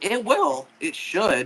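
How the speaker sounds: high, slow voice breaking mid-line. Talking with someone about rinse settings for the laundry, voice cracking. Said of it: "Why did that voice crack just happen".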